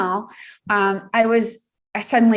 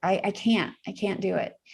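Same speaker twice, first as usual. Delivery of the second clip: ordinary delivery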